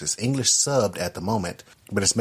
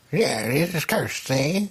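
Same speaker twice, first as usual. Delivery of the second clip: put-on slow, high, old-time gangster voice; 7 semitones higher than usual. A co-host mimics the voice another host used for a lady: old gangster voice. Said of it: "sounds like an old gangster".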